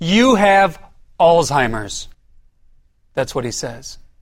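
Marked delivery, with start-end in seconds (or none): 0.0-2.1 put-on loud, boisterous voice. Retelling what the doctor said to him, imitating a loud, boisterous voice. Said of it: "with this loud voice, boisterous".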